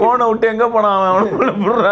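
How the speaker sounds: shocked, alarmed outburst, blurted out high.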